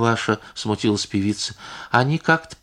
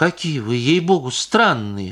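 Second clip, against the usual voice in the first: getting offended, starting to take offense. Pasha replies to a woman demanding the things back, starting to take offense. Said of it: "начиная обижаться".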